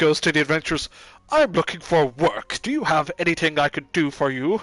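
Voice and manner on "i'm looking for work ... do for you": stuffy, self-important, pompous British butler voice. Retelling the game, a character asks the adventurers for work: pompous butler voice. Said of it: "Like a freaking pompous ass butler".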